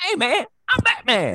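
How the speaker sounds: very high, loud, disguised superhero voice. Imagining the Wayans family playing Batman, introducing himself: Marlon Wayans voice. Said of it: "Marlon Wayans, Bruce Wayans".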